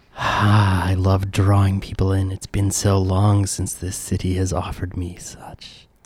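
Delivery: monstrous talking flytrap plant creature voice. Game master voicing a giant Venus flytrap speaking to the players, giant flytrap creature voice. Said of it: "pleasant air and a giant, monstrous Venus flytrap in the middle of it. / you guys walk down the stairs of the cellar into this very delicious-smelling room with warm, pleasant air and a giant, monstro".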